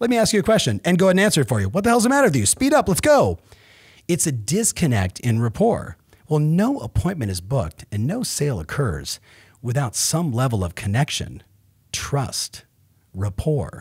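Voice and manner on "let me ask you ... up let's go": pushy, rushed, impatient, fast-talking delivery. Acting out how fast talkers react to slow talkers: imitating an impatient fast talker. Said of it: "how do fast talkers think about slow talkers? They're like".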